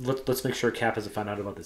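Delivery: normal talking voice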